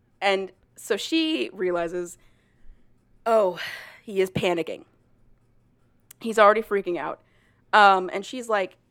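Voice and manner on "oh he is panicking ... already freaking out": usual speaking voice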